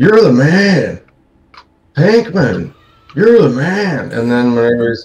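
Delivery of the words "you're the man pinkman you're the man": drawn-out, swooping, pitched-up voice. Retelling a TV scene where a guy on a motorcycle cheers: imitating the motorcycle guy. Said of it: "the guy who pulls up on his motorcycle in front of Jesse and Jane's apartment and goes".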